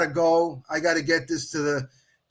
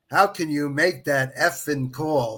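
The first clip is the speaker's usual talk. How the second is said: furious, heated, really angry outburst; 2 semitones lower than usual. Retelling a player's first words on the phone: imitating an angry tone. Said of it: "really angry tone".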